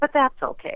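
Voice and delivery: talking-down, airily dismissive, patronizing tone. Retelling the president's reply to a request: imitating a patronizing tone. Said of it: "in a patronizing, condescending tone".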